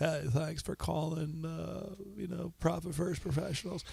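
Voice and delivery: rough, creaky put-on voice. Acting as a phone receptionist in a Bill Clinton voice. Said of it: "So if you want that voice".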